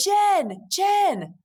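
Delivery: mock eager, super-excited. Retelling a phone call, the speaker acts out the caller's excited greeting. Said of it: "he's super excited".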